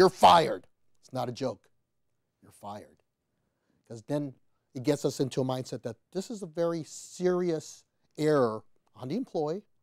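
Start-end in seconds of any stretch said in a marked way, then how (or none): 0.0-3.0 booming, firm, very loud, forceful delivery. Coaching someone on telling an employee they're fired, in a forceful, raised voice. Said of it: "bring that voice up and forcefully say".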